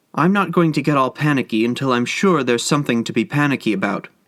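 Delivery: ordinary delivery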